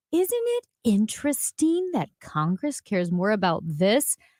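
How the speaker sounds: put-on condescending voice. Retelling a politician's remarks: imitating a condescending tone. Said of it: "this very condescending, like".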